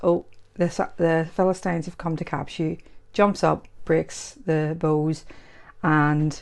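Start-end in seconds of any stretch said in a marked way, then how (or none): none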